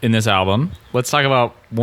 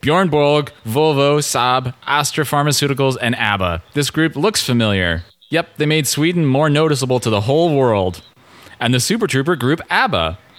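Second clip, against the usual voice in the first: robot-like delivery. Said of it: "read it in a robotic voice".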